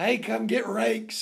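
normal talking voice

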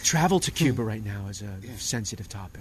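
very hushed, quiet, low radio presenter delivery. A podcast host describing his interviews, slipping into an NPR sort of voice. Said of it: "I go into my NPR sort of voice".

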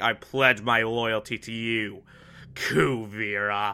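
play-acted, low, slow, venom-laced insincere tone. Recapping an episode, quoting a governor pledging loyalty to kuvira, in a mock-venomous tone. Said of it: "the most venomous way possible".

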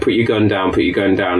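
usual speaking voice

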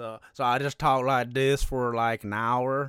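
flat, loud Southern accent.

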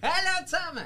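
shouting loudly. Greeting everyone as a returning guest: shouting a greeting. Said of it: "Schrei doch nicht so".

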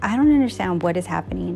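ordinary talk

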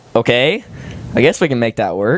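ordinary talk

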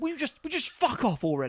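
theatrical English stage actor delivery. Retelling a film scene where an actor tells an intruder off: English stage actor delivery. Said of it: "In the most English actor kind of thing".

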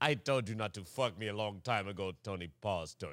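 put-on Latin American Spanish accent.

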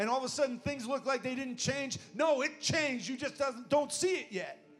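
loud, very high-pitched, preacher-style yell. Addressing the congregation tonight, yelling. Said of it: "I know I'm yelling".

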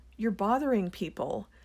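ordinary talk, nothing marked

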